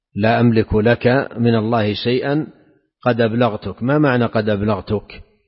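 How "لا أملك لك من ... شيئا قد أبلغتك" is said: ordinary talk, nothing marked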